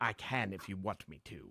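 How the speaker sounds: very quiet, low, hushed put-on English accent. Asked whether they can do an English accent, the speaker answers in an English accent. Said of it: "Can you do an English accent?".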